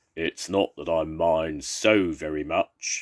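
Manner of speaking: deep, slow, low and unhurried growly voice. A narrator reads Percy speaking to a fox sleeping on him; Percy's deep growly voice. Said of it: "said Percy in a deep, growly voice".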